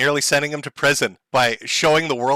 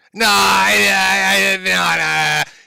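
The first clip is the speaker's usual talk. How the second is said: put-on high, very slow, halting nervous stammer; 5 semitones higher, 4 dB louder than usual. Mimicking a clip of Ralph denying something: imitating Ralph's nervous stammer. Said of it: "He looks so fucking nervous".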